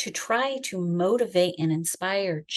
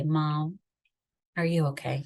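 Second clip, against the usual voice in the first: gentle, soft, hushed voice; 3 semitones lower than usual. Retelling a knock at the closet door: imitating a quiet, soft voice. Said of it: "a soft knock at the door and a quiet voice say".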